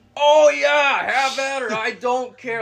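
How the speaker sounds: very loud, high-pitched top-of-the-lungs holler. Retelling a hunter's reply to a whispered question, retelling a shout. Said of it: "at the top of his lungs".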